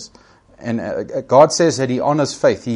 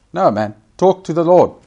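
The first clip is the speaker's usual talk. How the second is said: normal talking voice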